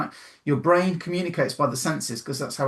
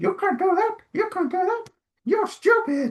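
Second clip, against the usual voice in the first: very high, squeaky cartoon mouse voice. Telling listeners to imagine their inner critic in a Mickey voice. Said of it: "change it to Mickey voice going".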